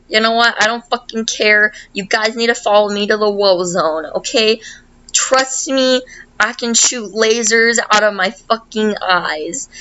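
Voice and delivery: plain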